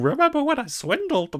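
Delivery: very high-pitched, silly cartoon voice. Describing a cartoon dog playing a chained ghost, quoting him in a funny Goofy voice. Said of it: "funny, goofy voice going".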